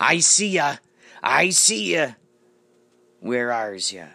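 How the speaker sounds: slow, drawn-out put-on pirate villain voice. Acting out a pirate detective hunting someone down: pirate voice. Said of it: "pirate detective or villain ... he could be like".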